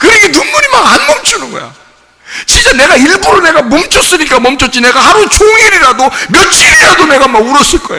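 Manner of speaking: high, loud, emotional shouting.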